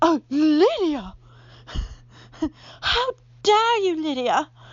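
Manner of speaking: put-on prim, pearl-clutching, high, loud old lady voice. Mocking the pearl-clutching haters, the speaker gives them an old lady voice. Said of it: "I give them, like, a old lady voice".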